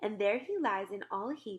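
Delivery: plain reading voice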